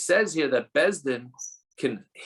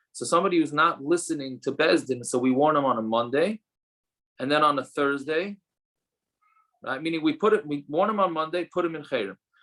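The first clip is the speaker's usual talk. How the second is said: ordinary talk, nothing marked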